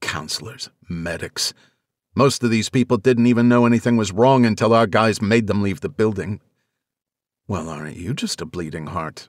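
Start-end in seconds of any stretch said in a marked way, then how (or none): 7.5-9.3 soft, low, playful teasing jab. Anya responds to Harrison's disapproving remark, teasing. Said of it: "Anya teased".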